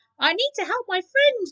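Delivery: very high, squeaking little mouse voice. Reading the children a story about a mouse, squeaky mouse voice. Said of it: "Kimi squeaks in her best mouse voice".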